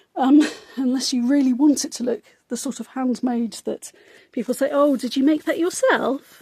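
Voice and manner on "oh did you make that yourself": faintly patronizing, slightly condescending, polite-sounding tone. Quoting people asking about handmade work, mock slightly condescending tone. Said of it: "In a slightly condescending tone".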